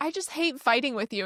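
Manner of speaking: tearful, crying voice, on the verge of tears. Retelling what she says to her dad during arguments: retelling own tearful words. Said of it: "I'll start crying and I'll be like".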